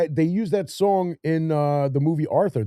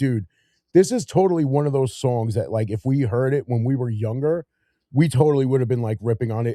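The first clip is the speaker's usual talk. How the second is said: usual speaking voice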